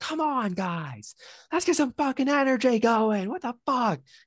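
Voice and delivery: high-pitched, angry, loud yell.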